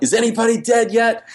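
mock high-pitched shouted call. Telling a story about someone coming downstairs during a power flicker, retelling a yell. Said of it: "he's yelling".

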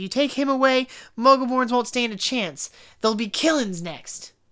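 put-on, all-defensive, protective tone. Retelling a Harry Potter scene, acting out defensive Hagrid. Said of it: "Hagrid comes back all defensive".

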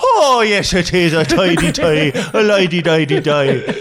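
put-on, fake Irish accent. Showing off the simple accent as a joke: put-on Irish accent. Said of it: "a very simple accent to do".

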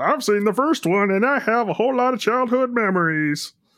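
very high, clumsy, poor frog-puppet voice. Wanting Dallas's take on the movie, answering in a very poor imitation of Dallas. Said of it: "That is a very poor imitation of Dallas".

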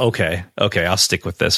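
ordinary delivery

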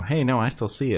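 normal talking voice

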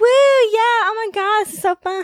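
mock high, drawn-out drunken whoops. Retelling an acting gig playing partygoers, mock drunk partying. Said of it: "like pretending to be drunk and partying like".

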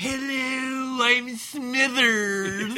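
very high, drawn-out cartoon voice, pitched way up. Talking about Simpsons impressions, a speaker introduces himself in a Smithers impression. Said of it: "he did Smithers".

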